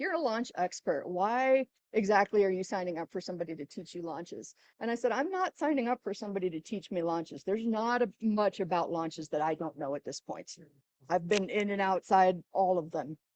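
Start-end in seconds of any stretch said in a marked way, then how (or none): none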